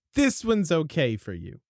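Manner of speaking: put-on cheeky manner. Recapping a story, acting out one character's remark to another, mock-cheeky tone. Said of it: "she gives her a cheeky little like".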